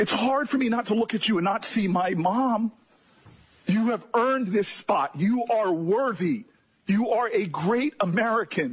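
mock choked-up delivery, voice catching with emotion. Praising the person across the table after saying this is why i get emotional: getting emotional. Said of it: "this is why I get emotional".

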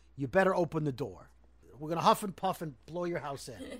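ordinary delivery

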